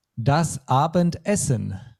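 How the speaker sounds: the word essen said with strong stress.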